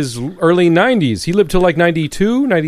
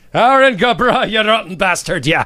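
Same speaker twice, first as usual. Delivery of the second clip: bad, butchered fake Irish accent; 4 semitones higher than usual. Joking about St. Patty's Day in the studio: bad Irish accent. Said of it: "That's the best Irish accent I could do".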